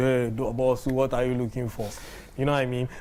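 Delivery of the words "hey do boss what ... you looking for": plain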